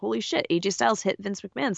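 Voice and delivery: normal talking voice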